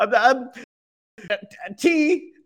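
very high, very slow, hesitant, stumbling nervous stammer. Voicing a character who orders tea: nervous hesitant voice. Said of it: "because he was very nervous".

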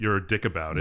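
normal talking voice

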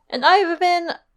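high voice cracking and breaking on words. Signing off as one of the hosts, the speaker's voice cracking. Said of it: "My voice cracked".

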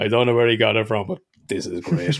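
ordinary talk

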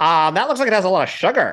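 squeaky, very high put-on politician speaking voice. Showing another speaker how Ron DeSantis talks: Ron DeSantis voice. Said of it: "he talks like this".

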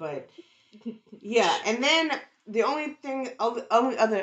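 stammering. Explaining a theory, the speaker trips over words mid-sentence, stuttering. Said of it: "I'm stuttering like shit".

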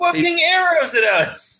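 very high, shouted, accusing yell. In a role-play scene, a character keeps yelling at him. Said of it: "I'm just going to start yelling".

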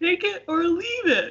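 very high, peppy, upbeat exclamation. Repeating the line after being told it sounded sad: upbeat exclamation. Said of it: "Exclamation mark".

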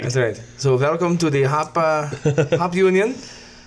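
mock, put-on German accent. Podcast host introducing the evening's beer, in a german accent. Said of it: "That is a German accent".

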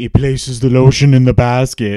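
loud creepy voice. Quoting a line from a creepy movie: creepy Buffalo Bill voice. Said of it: "say it in a creepy voice".

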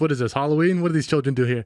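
ordinary talk

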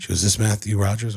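put-on formal, official tone. Retelling a doctor's phone call: imitating the doctor's official tone. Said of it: "she was talking all official".

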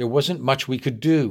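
plain reading voice

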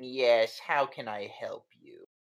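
put-on snide voice. Retelling a phone call, acting out the person who picks up, imitating a snide voice. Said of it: "You just hear this snide voice".

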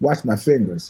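mock-arrogant man's delivery. Speaker recalls a man in l.a. putting a cigarette in his mouth, mock-arrogant delivery. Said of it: "real arrogantly".

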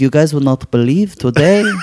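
put-on Israeli accent. Retelling what a friend's mom said: imitating an Israeli accent. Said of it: "She had an Israeli accent".

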